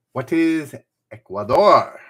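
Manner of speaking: a bit of Spanish accent. Giving the answer to a quiz clue, say it with a slight spanish accent. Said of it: "Said with a bit of a Spanish accent".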